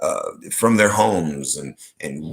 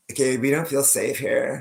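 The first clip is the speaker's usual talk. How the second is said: put-on, high valley girl lilt; 6 semitones higher, 4 dB quieter than usual. Retelling what a woman said, in her Valley Girl voice. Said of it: "speaking in her Valley Girl voice".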